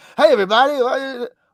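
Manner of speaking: very high-pitched, loud, keyed-up, wired comic delivery. Imitating the comedian's old high-energy pacing style: John Mulaney impression. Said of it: "he'd be pacing and".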